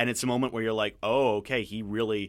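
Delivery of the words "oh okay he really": usual speaking voice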